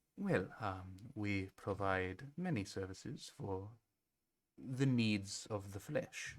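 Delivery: French-accented put-on character voice. Voicing a fantasy character who answers the party, in a French accent. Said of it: "She has a French accent in Elvish too".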